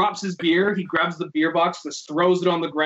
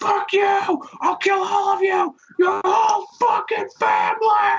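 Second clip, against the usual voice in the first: acted-out raging, unhinged, threatening scream, very high-pitched; 14 semitones higher than usual. Retelling a man walking around a bike rental area, imitating his screaming. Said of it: "just screaming like".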